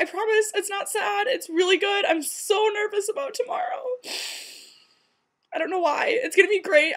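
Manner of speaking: crying through the words at a very high pitch. A runner talks about finally running a marathon tomorrow, crying while talking. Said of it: "I'm crying because I'm just so nervous".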